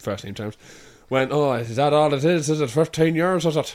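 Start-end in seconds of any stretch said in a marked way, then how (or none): 1.3-3.7 put-on voice of an uncomfortable man, higher. Retelling what the man said when meeting a fan: imitating Colin. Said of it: "Like that. Sounds nothing like this".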